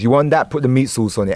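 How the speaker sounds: usual speaking voice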